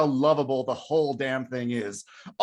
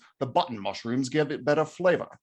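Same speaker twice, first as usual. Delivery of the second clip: bad put-on British film-star voice; 3 semitones lower than usual. Quoting Michael Caine in the Ipcress File, in a bad Michael Caine impression. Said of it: "my Michael Caine needs work".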